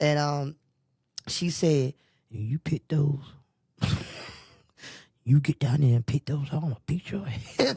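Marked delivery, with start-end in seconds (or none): 2.3-7.7 theatrical whisper. Retelling what someone whispered from the next seat: imitating someone whispering. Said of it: "she whispered to me".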